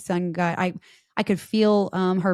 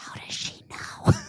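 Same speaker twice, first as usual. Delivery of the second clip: soft, hushed, breathy whispered aside. Retelling one child whispering to the other: imitating a whisper. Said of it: "my one whisper to the other".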